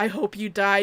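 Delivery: throaty, guttural, dropped-down deep voice. Contrasting Kaguya's two voices: imitating Kaguya's deep guttural voice. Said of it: "this deep guttural".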